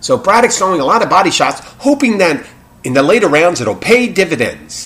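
put-on loud, swooping, old-timey 1930s announcer voice. Speaker imitates someone calling a braddock fight, old-timey 1930s voice. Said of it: "old timey, 1930 voice".

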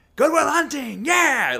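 mock thrilled, excited, very high and loud. Retelling the award presenter opening the envelope: imitating Jack Lemmon excited. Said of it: "really excited. He's like".

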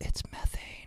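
very quiet, breathy, hushed whisper, barely audible. Explaining landfill gas, dropping into a Joe Biden whisper. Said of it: "I just whispered like Joe Biden".

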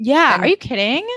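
voice getting high. Ranting about Lily and Rufus, the speaker's voice is getting high. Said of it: "My voice is getting so high".

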